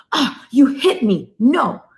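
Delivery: very slow, high, drawn-out, overblown alarmed voice. Parenting advice, showing the wrong response to a hitting toddler: big reaction to being hit. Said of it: "don't have a big reaction".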